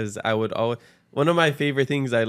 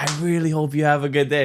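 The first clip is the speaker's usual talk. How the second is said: sincere, heartfelt, higher put-on voice; 4 semitones higher than usual. Imitating how a shop worker wishes customers well: imitating Drew, said with conviction. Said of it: "It's like".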